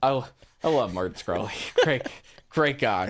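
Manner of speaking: mocking, insincere, sarcastic tone. Replying to a co-host about a team buyer in esports: sarcastic. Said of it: "That's sarcasm".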